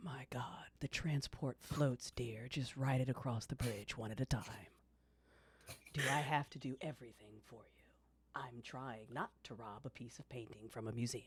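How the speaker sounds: low, hushed, condescending, patronizing voice. Telling how a voice in your head speaks up, as a little inner voice. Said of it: "and the voice says".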